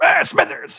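high, loud, angry shout. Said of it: "shouted at the barista again".

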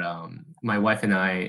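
ordinary delivery

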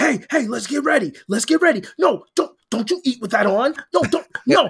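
acted, repeated, shrill, very high-pitched hollering. Retelling getting family ready for photos: imitating own past yelling. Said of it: "I wanna preserve the memory of yelling".

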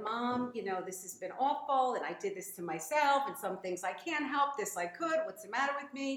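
ordinary talk, nothing marked

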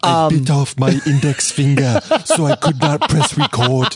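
put-on German-accented filmmaker voice. Joking about a filmmaking class, doing a Werner Herzog impression.

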